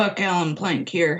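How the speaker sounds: rough male voice. Retelling a surprise phone call from Buck Plank, in a gruff Buck Plank voice. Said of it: "this kind of gruff voice answered".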